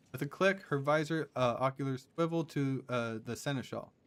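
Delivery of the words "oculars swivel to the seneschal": ordinary talk, nothing marked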